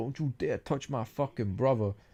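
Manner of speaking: fierce, threatening, reined-in scream. Retelling a TV scene where a character threatens: imitating Tommy screaming. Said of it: "Tommy's screaming".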